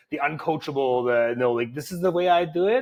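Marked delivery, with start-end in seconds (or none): 1.3-2.8 stubborn, digging-in, pitched-up put-on accent. Imitating an uncoachable client who refuses advice: imitating a client in an accent. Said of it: "I did an accent there".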